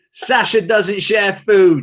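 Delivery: mock solemn voice, high, loud, very slow.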